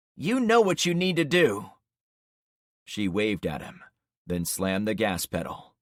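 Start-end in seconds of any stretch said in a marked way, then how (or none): 0.2-1.7 firm, stern, no-nonsense mom voice. Reading a mother ordering her son to go: firm "don't mess with Mom" voice. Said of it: "switching to her "don't mess with Mom" voice".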